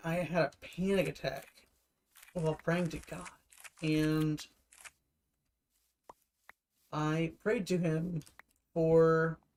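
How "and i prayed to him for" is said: voice cracking, very slow and halting. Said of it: "you hear my voice breaking".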